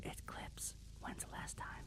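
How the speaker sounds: whispered, barely above breath, very soft. After announcing they will whisper it, the speaker gives the answer, whispered. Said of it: "I'm gonna whisper it".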